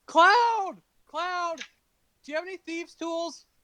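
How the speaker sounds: very high, calling-out yell. Calling through a locked door for a companion: yelling out in character. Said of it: "I'm gonna yell out".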